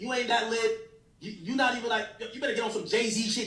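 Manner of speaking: ordinary talk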